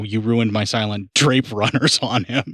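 mock calm matron's voice turning to violent, angry scolding. Retelling how a normally calm head lady turned violent: imitating a woman violently scolding. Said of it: "she totally goes like fucking".

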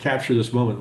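ordinary delivery

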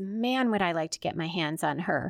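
plain

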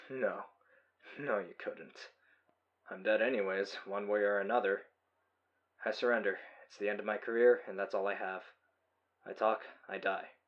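plain reading voice

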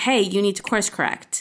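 ordinary talk

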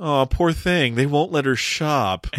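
mock heavy, dripping sarcasm. Retelling a TV scene, quoting Kudrow razzing a movie: mock-sarcastic Kudrow line. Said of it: "kudrow just extremely sarcastically says".

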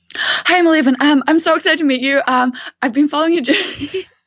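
high-pitched, rapid rush of words, mile a minute. Retelling how Eleven first approached and introduced herself: imitating Eleven talking a mile a minute. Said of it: "speaking kind of a mile a minute".

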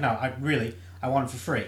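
mock deadpan, flat and serious. Retelling a man told to pay for his items, mock deadpan serious. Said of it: "he got like deadpan serious".

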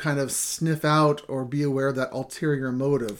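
usual speaking voice

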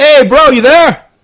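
very high-pitched, loud voice. Voicing a brother calling through the pet: voicing brother Leo on the phone. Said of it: "and through Leo speaks Leo".

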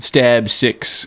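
ordinary delivery

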